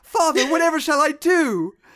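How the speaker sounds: very high, a bit loud fancy-lad voice. Mocking an actor's movie performance: imitating Kyle MacLachlan as a fancy little lad. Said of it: "playing the character like a little fancy lad".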